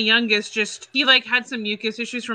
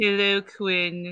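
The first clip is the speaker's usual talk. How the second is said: very flat, dead flat monotone; 2 semitones lower, 4 dB quieter than usual. Imitating a character from Daria greeting Quinn, Sandy monotone voice. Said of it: "she would just have this very monotone voice".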